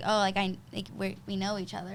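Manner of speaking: ordinary delivery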